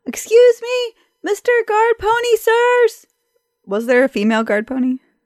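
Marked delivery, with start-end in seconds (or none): 0.1-3.0 long hollered yell, very high and slow. A player speaking as the character Rodney, calling out to the guard pony, yelling. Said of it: "he's going to yell".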